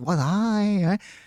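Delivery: put-on Chinese accent played for comedy. Comedian demonstrating the accents he does in his comedy, Chinese accent. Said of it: "I do the accents".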